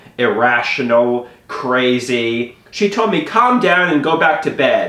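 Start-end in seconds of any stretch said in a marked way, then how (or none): none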